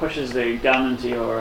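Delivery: ordinary delivery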